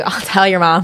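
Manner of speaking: scolding, teacherly telling-off voice. Acting out a warning to a friend: imitating a teacher's scolding. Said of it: "I sound like a teacher saying".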